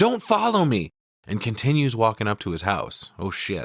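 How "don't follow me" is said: acted, sudden, very high, shrill yell. Retelling a movie scene where a character whips around: imitating someone yelling. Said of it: "he whips around and yells".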